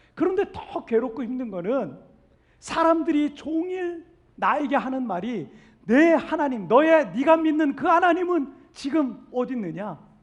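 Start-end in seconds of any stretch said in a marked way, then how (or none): 5.9-10.0 loud mocking taunt. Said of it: "이렇게 조롱한다는 거예요".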